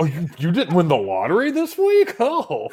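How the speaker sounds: feigned astonishment. Joking about lottery tickets that didn't win, demonstrating mock surprise. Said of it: "I say it like I'm surprised".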